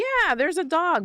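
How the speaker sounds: play-acted sarcasm, pitched way up. Retelling own past answer to a visitor asking about a dog: imitating own sarcastic reply. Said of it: "I said it kind of, like, sarcastic".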